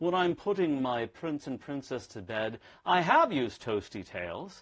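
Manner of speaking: put-on British accent. Suggesting a story that puts the product in a parent's life, in a British accent. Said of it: "I have to do the British voice".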